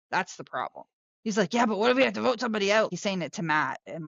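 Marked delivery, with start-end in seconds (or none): 1.5-2.9 frantic, fast, panicky fretting rattle. Retelling what a contestant said to Matt: imitating Steven panicking.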